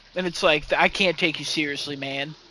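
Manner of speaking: ordinary talk, nothing marked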